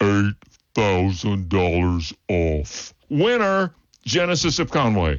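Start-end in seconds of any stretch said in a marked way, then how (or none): 0.0-2.9 slowed-down slow-motion delivery, much lower. A car ad announcer replays the price deal, in slow-motion replay. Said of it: "Let's hear it again in slow motion".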